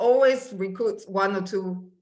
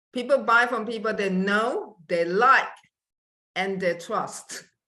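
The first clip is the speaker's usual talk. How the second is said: slower, spaced-out, deliberate delivery. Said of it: "can you say it a bit slower".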